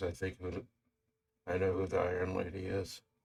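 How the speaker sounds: low, mumbled mutter under the breath, half to oneself. Recounting a scene, acting out what the character mutters: retold mutter. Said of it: "he kind of mutters".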